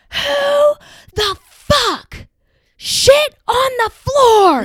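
piercing all-out scream, very high, very loud. Retelling how the sorority president came out of the bathroom, imitating someone screaming. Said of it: "comes out of the bathroom screaming".

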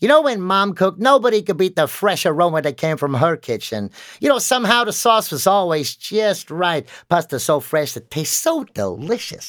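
put-on quirky American accent. Retelling a student's ad read for a voice coach: imitating a student's quirky american accent. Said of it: "I've got this American quirky accent that I do".

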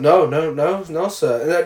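play-acted emotionless, flat, very slow deadpan. Retelling a film scene where an employee answers his shouting boss: imitating an emotionless reply. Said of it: "Ned obviously is fucking showing no emotion still".

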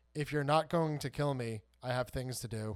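put-on, mock-calm delivery. Retelling a scene, quoting a woman answering the bad guy, retelling a calm reply. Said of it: "and very just calmly goes".

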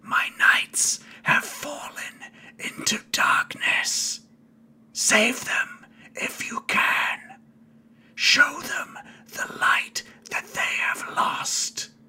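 hissed, breathy whisper in dragon voice. Narrator voicing something that speaks into everyone's heads: hissing voice. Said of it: "It just hisses out to you".

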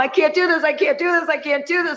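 mock crying, high, tearful, breaking down. Retelling crying all the way home after leaving: reenacting own past crying. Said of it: "cried all the way home".

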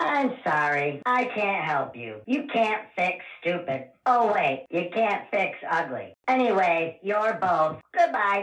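bad put-on voice assistant voice. Answering a request in a skit as Siri: bad Siri voice. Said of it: "sound like shit, Siri".

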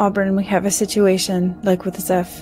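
plain

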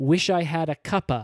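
ordinary delivery

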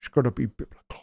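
put-on soft whispered Irish accent, spoken from mouth's corner. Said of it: "I speak out of the side of my mouth".

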